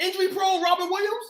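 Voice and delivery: incredulous outburst, pitched way up in disbelief.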